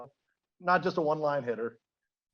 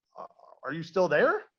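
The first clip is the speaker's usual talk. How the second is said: plain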